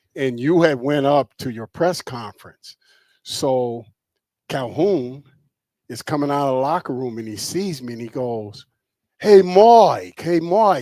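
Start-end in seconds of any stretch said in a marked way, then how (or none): 9.2-10.8 put-on very loud East Coast accent, one word stretched. Recounting Calhoun greeting him outside the locker room, in Calhoun's East Coast accent. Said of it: "with the East Coast accent".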